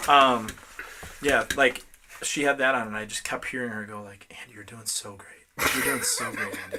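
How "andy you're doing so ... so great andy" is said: soft, hushed whisper under the breath. Retelling a yoga instructor's encouragement during a stretch: imitating someone whispering. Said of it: "She's, like, whispering".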